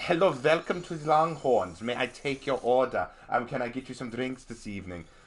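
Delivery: put-on German accent. Retelling waiting tables at Longhorns, greeting a table in a German accent. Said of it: "I did a German accent".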